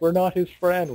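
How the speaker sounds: put-on high-pitched yelling. Retelling what everyone said at once on the mic: imitating a yell. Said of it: "We're trying to yell it".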